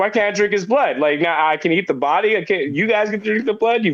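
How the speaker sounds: put-on annoyed, indignant, pissed-off voice. Retelling being annoyed at not getting the wine: imitating own past anger. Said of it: "And then I was pissed".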